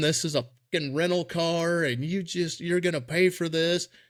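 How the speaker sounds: mock screaming woman, high, mild, kept light. Retelling a cable car crash, the lady screaming: imitating a woman screaming. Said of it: "the lady's screaming".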